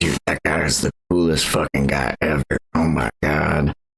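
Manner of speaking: put-on hushed whisper. Voicing President Arthur leaning over to Glory: whispering in character. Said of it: "is gonna whisper over to Glory and be like".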